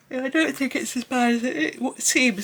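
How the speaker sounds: words pulled out by yawn. Explaining a colouring page, the speaker talks through a yawn. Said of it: "Sorry, I'm yawning".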